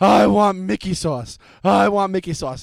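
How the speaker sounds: slow, cranky, worn-out, belligerently tired insisting. Retelling what she said after screaming on the ride home: imitating a belligerently tired demand. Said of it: "she's belligerently tired at this point".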